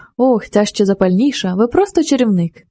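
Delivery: ordinary delivery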